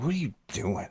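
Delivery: play-acted, fault-finding, suspicious, accusing, judgmental tone. Showing how a question sounds when asked in a judgmental tone. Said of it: "my defenses just went up".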